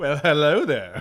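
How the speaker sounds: loud, high-pitched, big sassy delivery. Quoting a favorite movie moment, imitating Obi-Wan's sassy greeting. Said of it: "My favorite sort of sassy moment".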